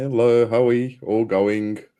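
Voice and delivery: loud but weary, already worn-out voice. Greeting everyone at the start of the session, tired voice. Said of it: "you sound like a teacher that's already tired".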